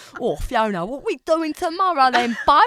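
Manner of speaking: exaggerated own accent. Claiming to do all the voices, the speaker plays a character in an exaggerated own accent. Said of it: "Can you impersonate your own accent so badly?".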